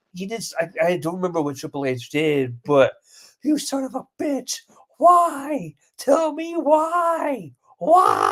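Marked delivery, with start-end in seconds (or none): 3.4-8.3 very high, slow, outraged, every why stretched, pitch soaring. Retelling a commentator reacting to a wrestler: imitating Jim Ross's outraged commentary. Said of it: "I loved his voice".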